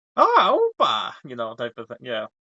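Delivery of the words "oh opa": very high-pitched Swedish woman's accent. Chiming in as the other speaker describes the voice, doing a Swedish lady accent. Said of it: "a Swedish lady voice".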